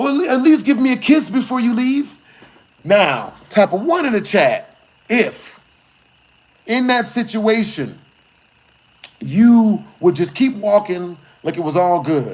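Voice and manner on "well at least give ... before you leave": loud, yelled call-out, pitched up. Retelling a girl yelling after the speaker as they walk away, yelling out. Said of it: "baby girl yells out".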